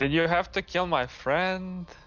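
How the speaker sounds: high, sarcastic, needling tone. Reacting in character after the stone giant is killed: sarcastic. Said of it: "I kind of say sarcastically".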